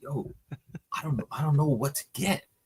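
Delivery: hushed, unsure half-whisper. Retelling what he half-whispered to a friend on walking into a shop, retelling a half-whisper. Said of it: "So I'm like whispering to my friend Danny".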